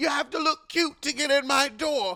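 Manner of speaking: bad put-on British accent. Retelling what Charisse says at her door: imitating Charisse's bad British accent. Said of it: "It's a bad British accent".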